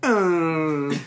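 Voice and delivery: put-on high, slow, whiny old man voice. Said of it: "I normally do the old man, whingy voice".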